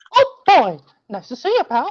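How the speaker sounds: very high, swooping, squeaky, bouncy falsetto. Asked by Amy to say oh boy in his Mickey voice, the speaker does a Mickey Mouse voice. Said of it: "say oh boy in your Mickey voice".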